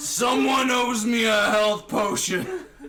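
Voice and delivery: high, loud, slow screaming shout.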